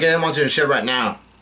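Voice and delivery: ordinary talk, nothing marked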